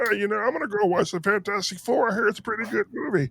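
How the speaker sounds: small, tiny, high, squeaky frog-puppet voice. Ranting that comic movies are for fans, mocking a regular moviegoer in a tiny puppet-like voice. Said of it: "Tiny Kermit?".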